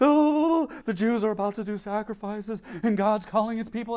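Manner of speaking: mock-quivering, put-on emotional voice. Mocking a preacher, imitating a quivering emotional voice. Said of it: "he's like literally quivering as he's saying this".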